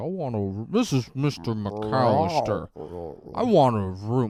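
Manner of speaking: dragging, drawn-out, slowed-down tape voice. Retelling a voice recorder played slow on a phone call: imitating a slowed-down tape voice. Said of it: "holds his thumb down on the tape so it goes slow".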